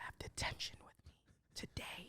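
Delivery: put-on whisper. Retelling what the teacher said during a test: imitating a whisper. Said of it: "came up to him and whispered".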